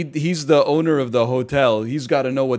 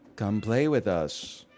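put-on creepy, eerie child voice, slower; 4 semitones lower, 6 dB quieter than usual. Gamers hear a voice; speaker shows what a creepy kid sounds like: creepy kid voice. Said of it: "Creepy Kid is when they go like".

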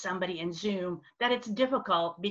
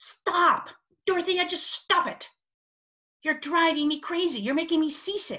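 put-on irritated, exasperated outburst, shouted, high-pitched; 8 semitones higher, 4 dB louder than usual. Retelling how a woman suddenly shouted at the speaker mid-conversation, retelling a shout. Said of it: "she just shouted out".

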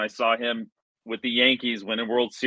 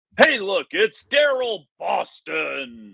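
put-on casual stadium announcer voice, pitched higher; 7 semitones higher than usual. Remembering how the stadium announcer called a player's name: imitating a casual stadium announcer. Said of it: "how the announcer, like, casually".

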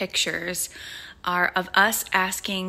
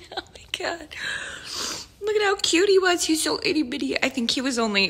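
crying through the words, tearful, high, choking-up voice; 9 semitones higher than usual. Looking through memory videos of a tiny newborn, tearful, choking up. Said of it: "I'm only one video into the memories and I'm already crying".

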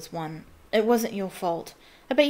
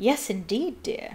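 trilled, trilling delivery; 3 dB quieter than usual. Reading a story, the narrator voices a woman admitting Harry, trilling. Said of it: "she trilled".

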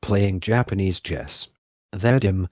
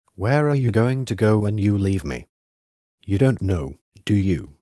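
cold, icy, chilly tone. A man answers a youth who insists on going with him: cold. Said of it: "Said Yuchi coldly".

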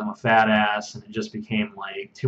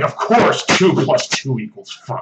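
put-on snotty sneer, higher, louder, slower; 4 semitones higher, 4 dB louder than usual. Retelling a friend emphatically agreeing with a joke: mock snotty sneering. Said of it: "snotty and sneering".

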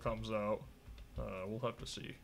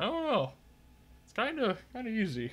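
hesitant, very high and swooping pitch; 12 semitones higher, 6 dB louder than usual. A streamer wrapping up a gameplay video for viewers, hesitant. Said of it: "I'm hesitantly saying that".

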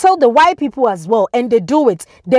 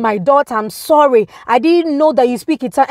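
mock humble, begging, pleading tone. Retelling how a woman on her knees apologized: imitating someone begging. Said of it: "She was begging me".

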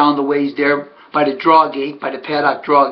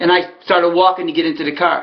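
ordinary talk, nothing marked

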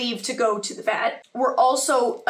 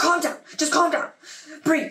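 flustered, panicked, fast rush of words; 4 semitones higher than usual. Retelling dad's reply to a crying call: imitating panicked dad. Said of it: "gets a little Charlie when he gets panicked".

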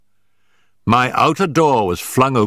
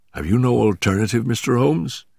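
plain reading voice

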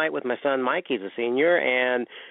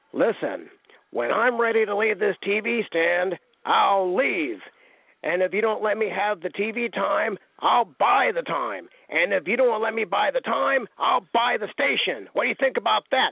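raspy, slightly higher, challenging wrestling-villain voice; 8 semitones higher than usual. Retelling what Don Manoukian said on TV, Don Manoukian's raspy voice. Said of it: "in his raspy voice".

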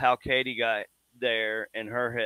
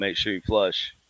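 normal talking voice

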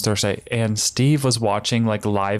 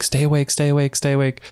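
put-on frantic, urgent voice, words repeated; 4 semitones higher than usual. Retelling a mother in a car yelling at her kids: imitating a mother yelling. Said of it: "yelling at her kids".

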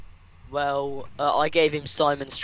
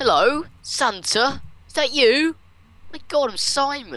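put-on voice, very high, very slow, drawn out; 10 semitones higher than usual. Reading a note aloud as Simon: Simon impression. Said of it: "I should do the Simon impression".

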